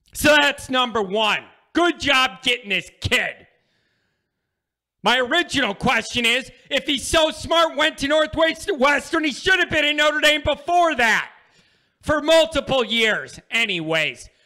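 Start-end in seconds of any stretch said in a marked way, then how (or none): 5.1-13.4 high-pitched, ranting yelling. Speaker presenting good news to listeners, yelling. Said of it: "I'm yelling".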